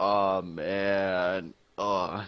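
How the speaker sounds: dull, nerdy, flat deadpan monotone, drawn out. Retelling a story about a nerdy kid at his desk: monotone nerdy voice. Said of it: "He's got a monotone voice".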